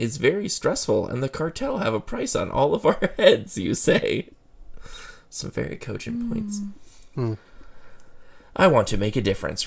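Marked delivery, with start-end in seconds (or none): 8.6-9.7 defensive, faster. Rivera answers a remark about their stressful job, defensive. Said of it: "Rivera says defensively".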